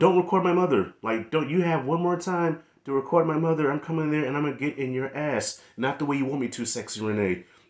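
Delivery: soft put-on voice. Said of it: "still with that soft voice".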